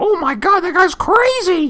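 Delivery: put-on young teen voice, pitched way up. Recalling their own reaction back in junior high, in their junior high voice. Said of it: "that's my uh, junior high voice".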